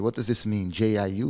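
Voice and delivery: ordinary talk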